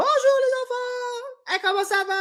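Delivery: small exaggerated voice. Showing the little voice always used to greet the kids: small exaggerated voice. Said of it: "je fais toujours une petite voix".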